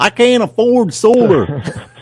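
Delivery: put-on Southern Alabama accent. Voicing a listener's objection the way someone from alabama would, in a put-on alabama accent. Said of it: "they're from Alabama".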